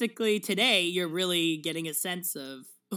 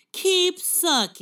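shrill put-on voice, very high and loud; 9 semitones higher, 7 dB louder than usual. Joking about someone, doing a Bill Maher impression. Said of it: "That's my impression of, of Bill Maher".

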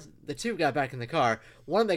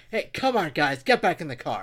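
play-acted, angry, fed-up, scolding, raised yell; 4 dB louder than usual. Recounting telling off the guys, retelling an angry yell. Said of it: "I'm really pissed".

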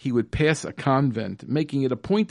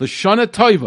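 put-on loud hollered shout in Italian accent; 7 semitones higher, 7 dB louder than usual. Retell how a man greeted you from his car window, imitating an Italian-accented shout. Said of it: "shouted out to me in his Italian accent".

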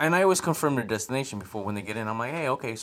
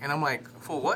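usual speaking voice

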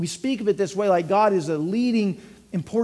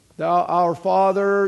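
put-on, fervent praying voice, louder; 3 dB louder than usual. Explaining how people change their voice to pray, demonstrating a put-on prayer voice. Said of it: "you go to pray and it's".

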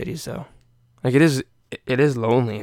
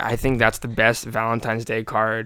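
ordinary talk

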